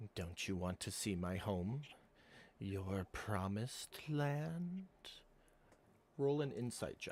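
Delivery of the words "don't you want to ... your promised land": slow, hushed half-whisper close to the ear. Game master voicing a mysterious half-whisper in a player's ear, half-whispering in their ear. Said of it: "you hear another whisper in your ear".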